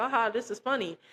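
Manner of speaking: put-on chuckling, laughing, lighthearted delivery. Retelling how a cousin reacted, imitating someone laughing while talking. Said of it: "he was laughing like".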